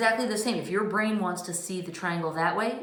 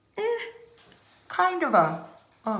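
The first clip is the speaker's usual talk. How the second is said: slow words stretched out by a yawn; 7 semitones higher than usual. Explaining a math check, then yawning mid-sentence. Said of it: "excuse me, I'm yawning".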